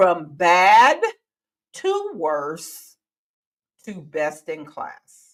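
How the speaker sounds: slow, halting, each phrase drawn out and broken. Speaker repeating a book title for the audience, said slowly. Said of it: "Let's say that slowly again".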